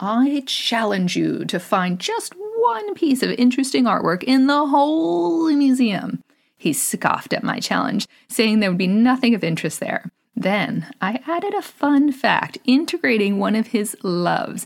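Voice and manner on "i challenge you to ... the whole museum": theatrical, grand, pitched-up, acted-out dramatic delivery. Retelling your own challenge to a scoffing man, in a dramatic tone. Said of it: "said in a dramatic tone".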